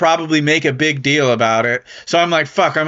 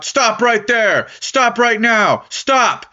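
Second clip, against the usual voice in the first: mock police shouting, much higher; 7 semitones higher than usual. Telling of walking uphill as a canine unit follows, retelling police shouting commands. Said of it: "I hear them shout".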